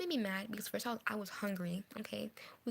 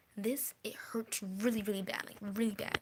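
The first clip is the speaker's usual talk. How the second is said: ordinary talk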